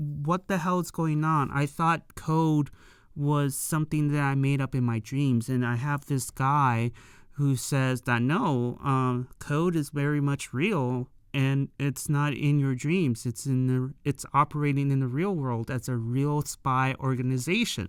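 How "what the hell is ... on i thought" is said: usual speaking voice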